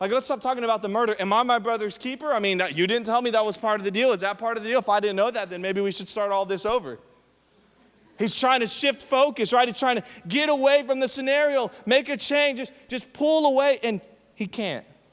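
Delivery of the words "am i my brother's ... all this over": ordinary delivery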